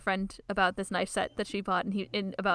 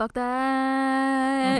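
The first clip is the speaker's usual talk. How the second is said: put-on nasal voice, higher and louder; 5 semitones higher, 4 dB louder than usual. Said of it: "He says it in that tone".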